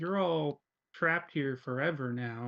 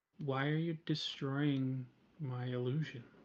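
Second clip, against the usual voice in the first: barely-there, very quiet, hushed voice; 3 dB quieter than usual. A storyteller voices someone speaking from the corner of the room, very quietly. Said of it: "you hear a very quiet voice just saying".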